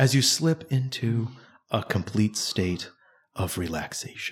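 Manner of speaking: slow, soothing guided-meditation voice. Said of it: "the person with that kind of voice".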